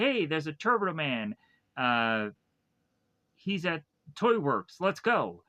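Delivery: ordinary delivery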